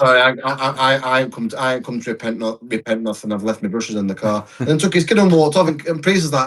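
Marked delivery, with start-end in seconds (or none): 0.0-4.5 play-acted bone-dry, matter-of-fact deadpan brush-off. Retelling what a man said to a priest before walking off; imitating dry deadpan delivery. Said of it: "it's just the way it's so dry".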